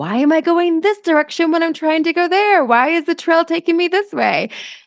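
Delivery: high-pitched, puzzled, baffled tone.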